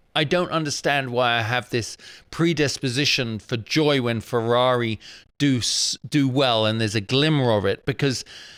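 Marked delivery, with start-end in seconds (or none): none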